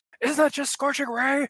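muffled, smothered-sounding, very high-pitched voice. Recounting a game moment and quoting Ed, muffled voice imitating Ed. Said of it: "in the muffled tone".

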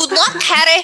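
very high, squeaky, piping character voice. Joining in on a book scene, imitating Cho Chang wishing Harry luck. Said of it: "all four of us just did an impression".

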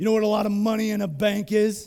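big, gruff male voice, put on. Retelling what Peter Schellenberger told him, in a big gruff voice. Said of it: "he has a big gruff voice".

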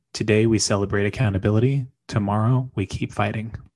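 ordinary talk

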